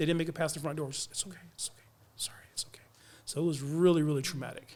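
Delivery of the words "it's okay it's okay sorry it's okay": faint, very quiet, breathy whisper. Retelling what crew members said as they left: imitating someone whispering. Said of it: "just in a whisper".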